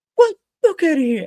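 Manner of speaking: high, loud, scornful mocking taunt, wrestler style.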